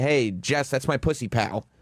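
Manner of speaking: ordinary talk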